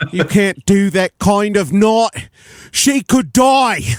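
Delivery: put-on very high, failed Cockney accent slipping into Australian. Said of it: "She went Australian there".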